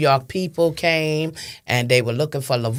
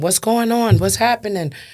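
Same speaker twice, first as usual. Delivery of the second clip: put-on high, panicked, desperate screaming; 7 semitones higher than usual. Retelling arriving at the scene with police present: imitating own screaming. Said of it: "So I'm screaming".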